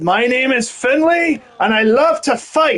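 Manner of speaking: exaggerated poor Irish accent. Repeating a wrestler's walk-on line from his Titantron, as Finlay in a horrible Irish accent. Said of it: "horrible Irish accent".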